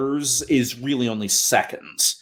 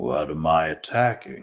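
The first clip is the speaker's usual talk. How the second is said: put-on very deep, unhurried, grumbly old voice; 8 semitones lower than usual. Narrator voicing a being that the listeners hear, grumbly, old, unhurried voice. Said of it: "grumbly, old, not in any rush kind of voice".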